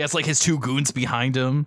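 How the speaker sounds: plain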